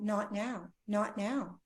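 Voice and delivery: play-acted, slow, drawn-out tearful crying voice. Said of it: "she was just crying out".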